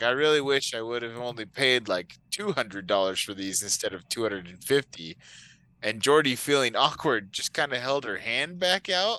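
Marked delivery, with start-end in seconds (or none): none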